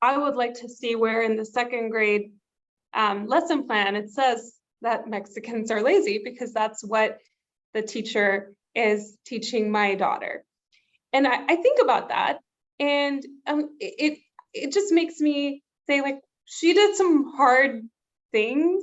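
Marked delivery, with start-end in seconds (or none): none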